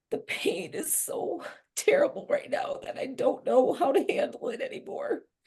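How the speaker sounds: tearful speech, crying through the words. Speaking to someone who urges deep breaths, crying while talking. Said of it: "I'm crying like this".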